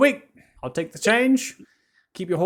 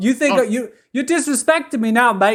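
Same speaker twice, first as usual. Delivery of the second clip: put-on Australian accent all the way through; 4 semitones higher than usual. Voicing a stable master arguing with players: australian accent. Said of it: "normal accents up north to immediately Australian".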